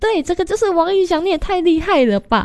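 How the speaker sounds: very high squeal, an octave up. Retelling the reaction when he named the person on a card, high shriek. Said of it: "瞬间就高八度尖叫说".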